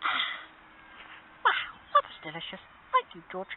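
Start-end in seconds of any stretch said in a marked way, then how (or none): 1.5-3.5 very high, loud, tiny, squeaky mouse voice. Voicing Mousy, who thanks George for a drink: voicing Mousy the mouse. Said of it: "you're welcome, Mousy".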